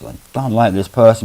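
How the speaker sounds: ordinary talk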